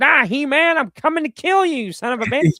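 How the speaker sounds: very high, loud, full cartoon villain voice. Just unboxed a new Skeletor figure in the car: Skeletor voice. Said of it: "doing, like, stupid voices with them".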